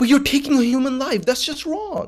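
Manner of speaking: mock exasperated protest, very high. Acting out someone arguing with a Nazi: imitating a frustrated protest. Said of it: "you are getting frustrated at this point".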